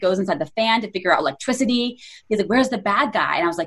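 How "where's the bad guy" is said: plain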